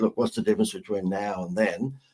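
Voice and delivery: ordinary talk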